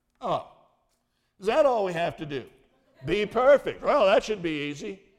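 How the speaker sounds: loud, heavy, knowing sarcasm. Speaker acts out how Anita, a senior citizen, reacted to the verse: retelling Anita's sarcasm. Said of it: "senior citizens get sarcasm".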